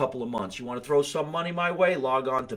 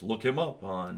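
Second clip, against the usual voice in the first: hushed, put-on radio announcer voice; 3 semitones lower, 5 dB quieter than usual. Plugging a guest's social media on a show, in a radio announcer voice. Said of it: "Here comes my radio voice".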